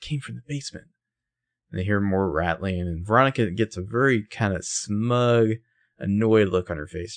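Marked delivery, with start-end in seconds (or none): 0.0-0.9 high, hushed, barely audible whisper. Recapping a story, the speaker retells what Ella whispered: retelling a whisper. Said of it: "And Ella whispers".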